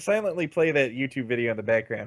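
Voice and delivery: ordinary talk, nothing marked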